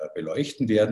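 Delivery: ordinary talk, nothing marked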